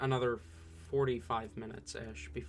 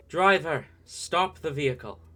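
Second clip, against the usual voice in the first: very loud, echoing voice with full authority; 5 semitones higher, 10 dB louder than usual. Voicing an unseen guard ordering a driver to stop: echoing commanding voice. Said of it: "a voice echoes".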